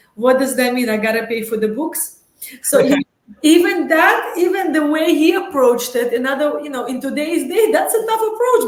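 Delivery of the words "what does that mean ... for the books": put-on voice with a Russian accent. Speaker retells his father's reply to news of a full scholarship; imitating his father's Russian accent. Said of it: "with his Russian accent".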